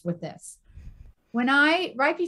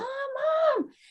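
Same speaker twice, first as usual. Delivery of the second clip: high-pitched, mild mock scream. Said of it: "she would scream".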